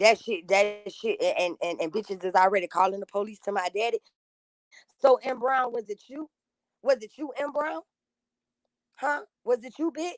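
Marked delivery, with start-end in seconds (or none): 5.0-10.1 pitched-up, straining, barely contained anger. Demanding to know who called the police, barely holding back anger. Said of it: "gather myself before I really hurt somebody's".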